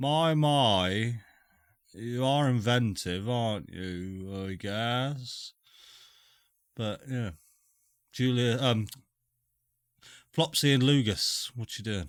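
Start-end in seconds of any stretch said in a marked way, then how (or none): 0.0-5.5 slow god voice with the first my drawn out. Voicing a watching god who comments on both groups: voicing the god Lathander. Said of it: "he's just watching both of your groups just going".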